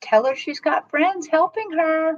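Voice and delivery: tiny, small, high-pitched little spirit voice. Speaking for a little elemental peeking out beside the guides, in a little voice. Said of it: "I love that little voice".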